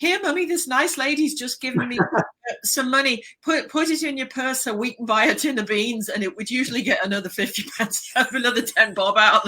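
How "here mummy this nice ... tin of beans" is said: very loud, high-pitched put-on little child voice. Recalling running over to mummy as a child with money, retelling a very loud voice. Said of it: "say in a very loud voice".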